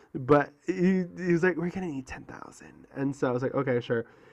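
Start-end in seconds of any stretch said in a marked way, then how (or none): 1.5-2.8 hushed, whispery put-on voice. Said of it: "doing the voice".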